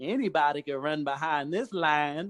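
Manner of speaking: slow, drawling put-on Southern American accent. Retelling what everybody said after letting him go, in a put-on Southern accent. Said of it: "stop doing that southern accent".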